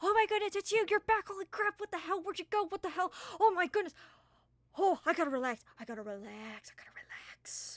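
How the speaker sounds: ecstatic excited voice. Voicing an overjoyed character greeting a returned friend: overjoyed character voice. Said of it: "just so happy, and it's written all over her face".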